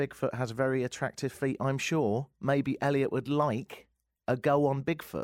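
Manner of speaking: ordinary talk, nothing marked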